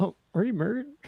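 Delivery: mock, abrupt, high, frightened voice. Imitating a man in an ad who gets suddenly scared: imitating a suddenly scared man. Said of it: "suddenly scared".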